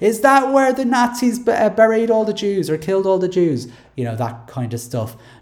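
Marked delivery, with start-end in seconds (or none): 0.0-3.7 play-acted, high-pitched shouting at the top of voice. Retelling what the speaker shouted as a child passing a graveyard; retold shout. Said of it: "I would shout at the top of my voice".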